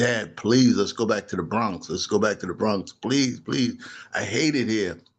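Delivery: acted-out, desperate, panicked pleading. Retelling begging Dad after running home, imitating own panicked plea. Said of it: "in panic".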